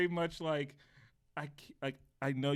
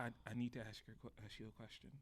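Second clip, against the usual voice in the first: put-on serious tone, lower and quieter; 5 semitones lower, 19 dB quieter than usual. Retelling a coworker asking to talk in the break room: imitating Mimi's serious tone. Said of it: "she has, like, a serious tone, too".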